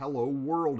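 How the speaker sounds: ordinary delivery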